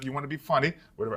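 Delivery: light put-on Caribbean accent, lightly mocking. Speaker imitates a caribbean father teasing a child who wants to be funny, caribbean father accent. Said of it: "I just did the accent".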